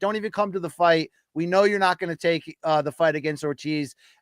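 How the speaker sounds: ordinary talk, nothing marked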